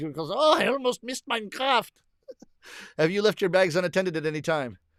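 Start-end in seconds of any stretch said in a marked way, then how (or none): 0.3-1.9 put-on German accent at very high pitch. Told by a co-performer to say the line in a german accent, the speaker does. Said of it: "You got to say in a German accent".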